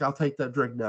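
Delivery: normal talking voice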